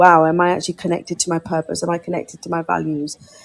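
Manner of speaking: ordinary talk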